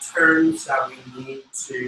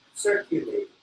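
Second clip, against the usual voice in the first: circulate, first syllable cir- stressed, level tune; 6 dB quieter than usual. Correcting a learner's pronunciation of circulated: stress on cir in circulate. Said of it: "Accent on the first syllable. Very straight".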